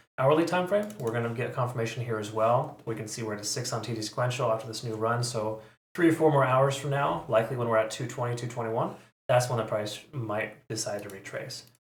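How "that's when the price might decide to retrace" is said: might stressed, slow delivery. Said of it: "Emphasis on might".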